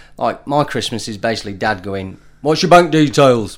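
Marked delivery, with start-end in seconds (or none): 2.4-3.6 put-on strong, broad northern English accent. Quoting Dad at Christmas: broad northern accent. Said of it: "I'm gonna sound really northern again".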